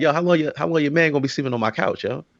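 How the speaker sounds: usual speaking voice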